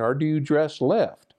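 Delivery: put-on American southern twang accent. Retelling a question a man asked him, imitating his southern accent. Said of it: "he had a southern accent".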